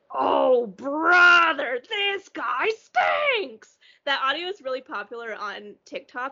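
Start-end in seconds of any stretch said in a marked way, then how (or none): 0.1-3.7 loud, very slow, dragged-out jeering heckle. Retelling a video where a fish heckles a bad comedian: imitating a fish heckling. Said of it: "you hear that one fish go".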